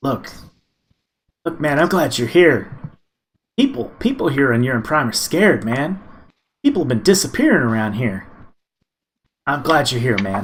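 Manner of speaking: quick, hurried, secretive half-whisper. Narrating a game, voicing a man who half-whispers to the player before their turn: hurried half-whisper. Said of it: "he whispers to you really quick".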